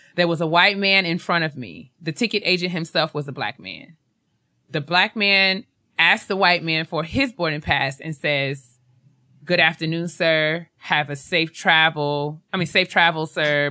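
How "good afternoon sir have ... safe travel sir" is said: ordinary delivery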